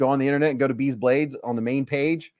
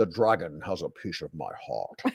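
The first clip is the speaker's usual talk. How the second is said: put-on Scottish voice, lower and quieter; 9 semitones lower, 8 dB quieter than usual. Reading out a product name, then doing a Sean Connery impression. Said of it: "Sean Connery".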